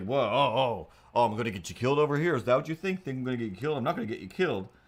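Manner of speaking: wildly offended, indignant, affronted, acted-out rant. Retelling how people react to caution: imitating offended people. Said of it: "wildly offended by my cautiousness".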